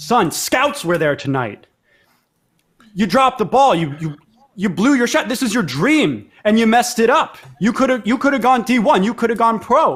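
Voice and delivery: booming father voice. Narrating a story, voicing a man overheard through the trees: booming voice. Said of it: "you hear a booming voice".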